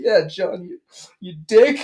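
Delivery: high, put-on fake sobbing. Retelling turning around to accuse john in front of the teacher, fake sobbing. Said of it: "it's like fake sobbing".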